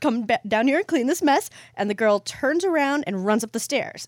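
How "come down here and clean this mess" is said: acted, stern, fed-up, scolding angry mom voice, pitched up. Telling a story, the speaker voices the angry mom: put-on angry mom voice. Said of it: "I like your mom voice".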